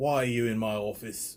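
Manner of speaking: attempted English accent that sounds Australian. Describing an American Idol judge's reaction, in a Simon impression. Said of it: "That was kind of an Australian accent, not my English".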